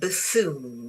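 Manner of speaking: buffoon with the weight on second syllable foon. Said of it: "the stress is on this bit, on the foon".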